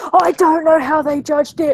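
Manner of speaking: high, aggrieved, put-out, indignant griping tone. Retelling what a mum posted on Facebook, mimicking a mum kicking off. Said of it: "She was kicking off on Facebook".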